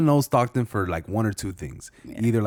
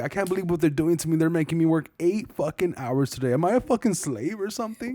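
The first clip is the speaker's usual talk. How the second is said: tearful, crying, high sobbing whine; 8 semitones higher than usual. Retelling a video of a Starbucks worker on one knee: imitating someone crying. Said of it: "started crying".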